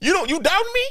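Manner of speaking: very high, incredulous, disbelieving shout. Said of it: "Why are you yelling at me?".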